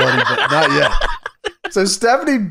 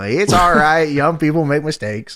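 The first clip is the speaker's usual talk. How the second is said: plain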